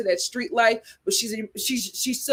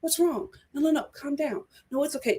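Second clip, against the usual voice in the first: timid, meek, calming, appeasing tone; 4 semitones higher, 4 dB quieter than usual. Speaker recounts Amber calming an angry man: imitating Amber's low, meek voice. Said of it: "real low, meek voice".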